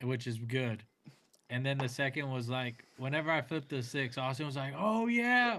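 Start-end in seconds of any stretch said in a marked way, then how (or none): 4.8-5.6 very high-pitched, super loud yell. Retelling a card game, imitating a friend yelling: imitating someone yelling. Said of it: "yelling it super loud".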